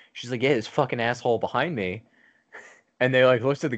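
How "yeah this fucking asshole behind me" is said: irate, angry voice with cursing. Retelling what a woman said about the man behind her: imitating an angry woman. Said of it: "Why is she so angry?".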